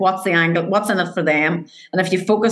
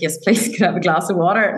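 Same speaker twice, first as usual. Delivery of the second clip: mock trembling, rushed, shaky nervous voice. Retelling own first sales meeting, asking for water: imitating own shaking voice. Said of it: "my voice was shaking".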